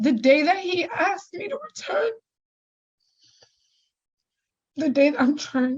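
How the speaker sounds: crying, tearful, voice breaking. Addressing the judge, the speaker breaks down: crying while speaking. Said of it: "I said I wasn't going to cry".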